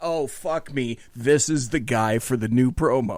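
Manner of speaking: normal talking voice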